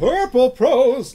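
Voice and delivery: very loud, booming announcer voice. Mid-conversation, the speaker breaks in with a Don Pardo impression. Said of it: "That's my uh, Jimmy Pardo impression".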